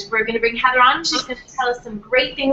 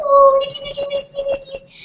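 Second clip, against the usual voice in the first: put-on very high-pitched baby-talk voice. Retelling how a friend's mom talked to her little dog: imitating a dog-talk voice. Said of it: "her mom would talk to Nikki in this voice".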